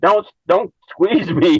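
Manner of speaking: high spirit-like scream. Retelling what a spirit on the finger said: imitating a spirit screaming. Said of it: "He was, like, screaming".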